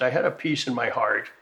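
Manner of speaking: plain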